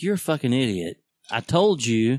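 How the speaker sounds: mock-exasperated, annoyed tone. Retelling how she reacted to them losing cap and glasses: imitating her annoyed tone. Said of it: "I can hear her, that tone".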